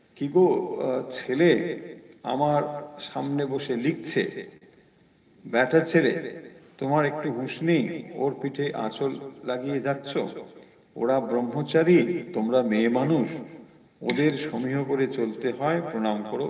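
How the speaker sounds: plain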